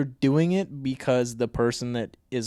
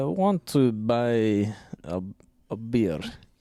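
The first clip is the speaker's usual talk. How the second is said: slow put-on Russian accent, "buy" drawn out; 3 semitones lower than usual. Asked to show off a russian accent, put-on russian accent. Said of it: "can you do a Russian accent?".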